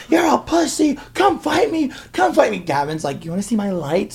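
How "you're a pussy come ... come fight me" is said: mock taunting scream, very high-pitched. Speaker retells pulling up and screaming at someone to fight: retelling own screaming. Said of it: "I was just screaming like".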